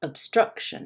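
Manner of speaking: stress on struc in obstruction. Teaching word stress with an example word: stress on 'struc' in obstruction. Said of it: "struck is a little bit higher".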